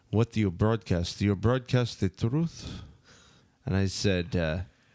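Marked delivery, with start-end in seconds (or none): 0.1-2.6 put-on Russian accent. Retelling what a woman handing out a paper asked: imitating a russian accent. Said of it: "she had, like, a Russian accent".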